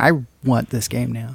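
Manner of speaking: ordinary talk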